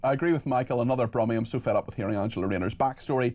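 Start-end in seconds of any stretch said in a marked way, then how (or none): none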